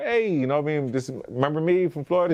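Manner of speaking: excited high-pitched voice.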